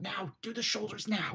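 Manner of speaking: hushed, half-whispered voice. Voicing Zorblay giving the others a quiet instruction: half-whispering to the others. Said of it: "Zorblay's now whispering to the others".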